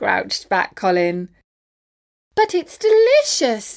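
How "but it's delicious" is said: very high-pitched squealed voice. Reading a story aloud, a young tadpole answers the grumbling older character, squealing. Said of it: "squealed Tim".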